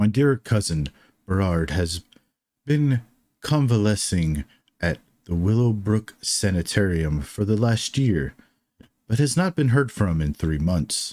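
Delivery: lordly, regal voice, desperate and edged with panic. Voicing a second magical voice speaking to the players: regal voice with panic and despair. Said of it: "A completely different voice".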